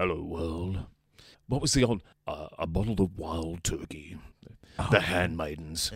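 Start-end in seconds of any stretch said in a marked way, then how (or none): 0.0-0.8 mock radio announcer voice. Asking the guest for a John Laws, the speaker shows how: John Laws impression. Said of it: "Can you do us a John Laws?".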